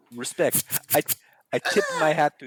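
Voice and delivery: swooping put-on Quebec accent. Talking about a film's practical effects with co-hosts, in a Quebec accent. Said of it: "What accent was that?".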